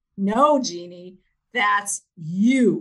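loud, slow, in-your-face insistence, "you" stretched out. Recalling a man who got in her face, retelling him saying it really loudly. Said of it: "gets in my face and says really loudly".

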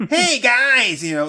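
squeaky, whiny, very high-pitched nerd voice. Mocking an actor who always plays an annoying nerd, in a squeaky nerd voice. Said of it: "annoying ass nerd with a squeaky voice".

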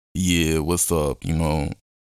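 mock very low, listless, flat, low-energy monotone. Retelling how they used to fake talking to people: imitating own flat low-energy voice. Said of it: "ain't no energy in that".

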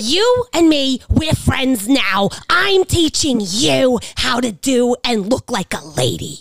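imitated female voice. Retelling what a woman told them, the speaker is imitating a woman's voice. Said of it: "I'm getting like Fran Drescher vibes".

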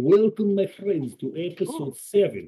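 put-on high-pitched Russian-accented English. Told by another speaker to do it more Russian, the host opens the episode in a Russian accent. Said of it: "Do it more Russian".

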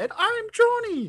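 voice pushed way up, very high-pitched. Introducing the show as the absent friend: imitating Johnny. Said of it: "pretty professional impersonation, of our friend Johnny".

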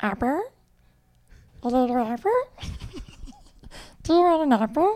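little, high, squeaky chipmunk voice. Asked about impressions, showing off a chipmunk voice. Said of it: "I used to do a really good chipmunk voice".

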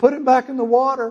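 put-on high, shrieking, screaming teenage girl voices. Telling of teenage girls watching a fish flop on the floor, imitating them screaming. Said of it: "these teenage girls are screaming".

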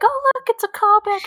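screaming. Speaker recalls their reaction on spotting a callback, retelling a scream. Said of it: "I scream like that too".

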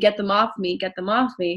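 ordinary delivery

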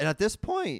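voice breaks way up high, squeaky. The speaker talks about being unable to stop vaping: voice crack. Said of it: "nice little voice crack".

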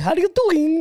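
put-on Spanish-sounding accent, pitched way up.

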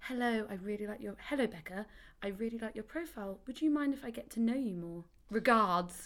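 really formal, proper, polite tone. Quoting messages from forty-year-old men on a dating site: imitating a really formal message. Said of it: "really formal, like".

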